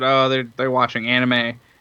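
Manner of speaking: mock awkward, sheepish, halting, faltering tone. Retelling answering dad's question about what they were doing: imitating own sheepish reply. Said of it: "sheepishly said".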